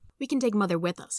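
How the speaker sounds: plain reading voice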